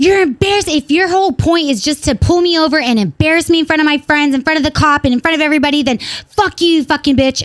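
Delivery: put-on heated, angry rant, rambling on and on. Recounting being pulled over, acting out her angry rant. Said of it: "She's like rambling and ranting".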